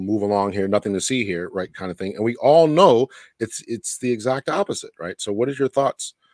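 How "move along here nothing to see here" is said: ordinary talk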